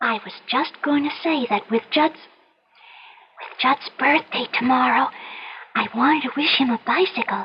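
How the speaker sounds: hushed whisper. Telling a secret wish to Ma after the other speaker leaves: whispering. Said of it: "I'll have to whisper".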